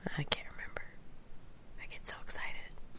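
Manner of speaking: soft, unvoiced whisper under the breath.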